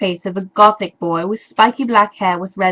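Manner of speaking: ordinary delivery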